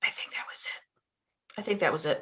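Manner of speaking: quiet whispering. Confirming quietly that someone has just left: whispering. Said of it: "you don't have to whisper".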